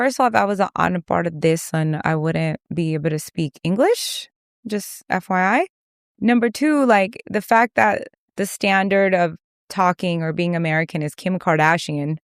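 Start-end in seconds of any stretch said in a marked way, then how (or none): none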